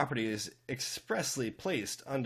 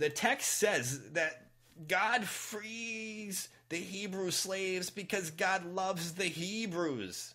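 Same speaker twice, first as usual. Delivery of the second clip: Yiddish-inflected accent, "frees" drawn out; 9 semitones higher than usual.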